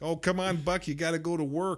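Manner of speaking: put-on Chicago Polish accent. Speaker imitating a woman urging a man to go to work, Chicago Polish accent. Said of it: "she's got that Chicago, Cleveland accent".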